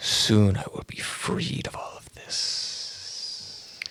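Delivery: quiet, hushed, under-the-breath whisper. In an improvised scene, the speaker whispers to a painting. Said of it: "I just sort of whisper to it".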